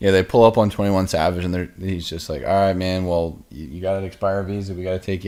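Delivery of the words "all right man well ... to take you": ordinary delivery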